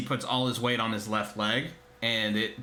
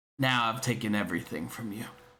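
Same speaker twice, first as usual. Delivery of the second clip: whispering. A game master voices a character whispering to a player, loud enough for only them: whisper. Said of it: "he whispers to you".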